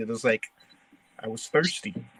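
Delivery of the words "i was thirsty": said real low, quiet and hushed. Retelling an off-script moment in a scene: imitating saying a line real low. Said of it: "I said it real low".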